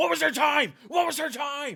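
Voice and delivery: very loud, very high, shrill screaming. Recalling the moment a call ended and asking for a time, retelling a scream. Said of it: "immediately I screamed out".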